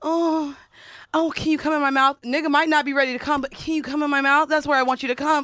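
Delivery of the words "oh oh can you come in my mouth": put-on lively, eager, animated delivery, laid on nasty. Retelling own past words in bed: imitating own animated dirty talk.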